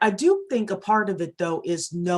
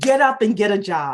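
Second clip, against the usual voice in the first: loud, stern, military police voice; 3 semitones higher, 7 dB louder than usual. Retelling the father ordering the speaker off the couch: imitating a stern military voice. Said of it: "that stern military voice".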